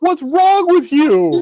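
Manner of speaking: very high, shrill yell. Retelling yelling at the TV about a first-time tarantula: imitating own yelling. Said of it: "I was more like yelling at T V".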